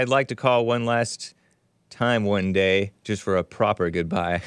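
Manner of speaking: ordinary talk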